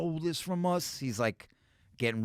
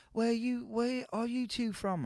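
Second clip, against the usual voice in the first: very high-pitched, badly done put-on English accent; 10 semitones higher, 3 dB quieter than usual. Retelling a bar story to a friend, quoting the barmaid in a bad English accent. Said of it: "I don't do a good English accent".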